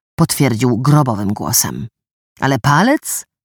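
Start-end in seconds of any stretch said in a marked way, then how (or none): 2.4-3.2 incredulous, in disbelief. Zadrożny hears the news and cannot believe it, incredulous. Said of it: "Zadrożny nie mógł w to uwierzyć".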